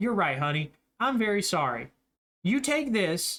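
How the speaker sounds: demeaning, condescending, patronizing talking-down tone. Voicing a character who turns and hands over salt, in a demeaning tone. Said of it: "in a very like demeaning tone".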